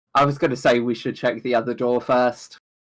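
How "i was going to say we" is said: ordinary delivery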